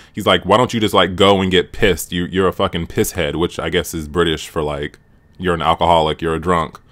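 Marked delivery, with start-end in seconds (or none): none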